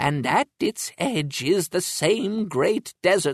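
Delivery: plain reading voice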